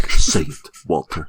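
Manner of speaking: insistent, pressing, firm tone. Acting out Gus pulling Walter into the desert: imitating Gus. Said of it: "Gus just, like, pulls him out into the desert".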